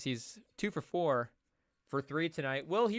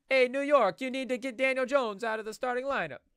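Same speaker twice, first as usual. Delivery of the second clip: high, bad put-on Italian mobster accent; 9 semitones higher, 4 dB louder than usual. Joking about a crime family, voicing a mafia guy in an Italian mafia accent. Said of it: "The Italian accent gets worse and worse".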